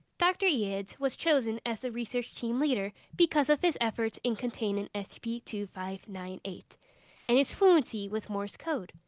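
robotic, robot-like voice. Reading the intro of an SCP interview log aloud, in a robotic voice. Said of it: "gotta get into my robotic voice".

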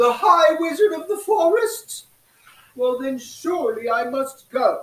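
booming, regal, royalty-like voice. Voicing the Squirrel Queen greeting the children: Squirrel Queen voice. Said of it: "I'm the Squirrel Queen".

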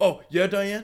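put-on heated, angry tone. Retelling a neighbor confronting a mother: imitating a raised, heated tone. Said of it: "raising his tone".

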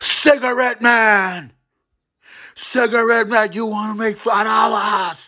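high, screaming hollering. Retelling how the brother called from the alleyway: imitating someone screaming. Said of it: "he starts screaming from the alleyway".

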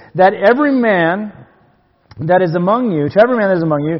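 "every" strongly stressed and punched. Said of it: "this was his emphasis".

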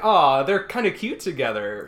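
ordinary delivery

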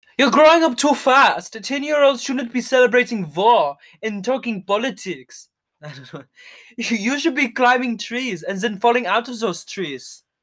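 really bad put-on German accent. Improvising a scene after suggesting really bad German accents, bad German accent. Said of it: "This is kind of German".

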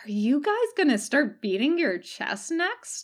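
fascinated, intrigued, with high swooping pitch. Katsuko asks the group a question, fascinated.

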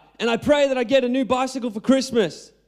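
mock kid hollering, high-pitched and childish. Telling a joke about a little boy at bedtime prayers, retelling a boy's yell. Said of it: "And then he yells out".

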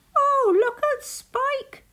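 shrill, very high, loud laughing cry. Narrator reading the rabbits' line about Spike in a story, laughing. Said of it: "the rabbits laughed".

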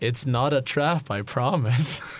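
sly, knowing tone spoken through a chuckle. Game master speaking to the players, said with a laugh. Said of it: "Trust that laugh".

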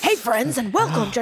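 sharp, in-your-face tone. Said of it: "It was sharp".

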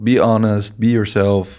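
plain

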